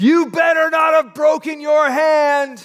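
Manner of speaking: very high, loud, hall-filling yell. Retelling how a watching coach yelled across the gym: imitating coach yelling. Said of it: "yells so the whole gym could hear".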